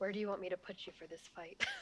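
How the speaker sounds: quick, hushed whisper. In a game, a character whispers into another's ear before a fight, whispering. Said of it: "just like whispers into Archer's ear".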